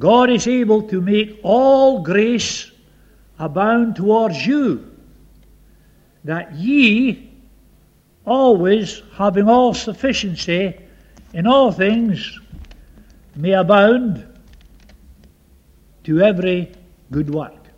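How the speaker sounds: slow deliberate reading. Reading a lovely Bible verse aloud to listeners, reading slowly. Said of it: "I'm going to read this slowly to you".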